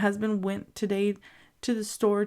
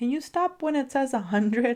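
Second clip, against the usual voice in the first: light, playful, joking tease, pitched up; 5 semitones higher than usual. The speaker retells a remark made to the grocery cashier, retelling teasing the cashier. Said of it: "I was teasing the cashier".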